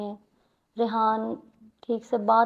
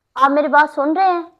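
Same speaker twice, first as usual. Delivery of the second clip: very loud, angry, high-pitched shout; 5 semitones higher, 12 dB louder than usual. A woman confronting a man and demanding that he listen, shouting. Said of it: "अब तुम मुझ पे चिल्लाओगी?".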